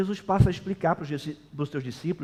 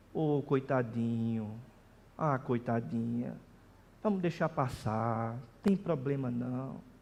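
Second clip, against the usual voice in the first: put-on pitying tone, lower and quieter; 3 semitones lower, 6 dB quieter than usual. Mimicking people in the church who reprove others in a pitying tone, mock-pitying. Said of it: "reprova Jesus em tom de piedade".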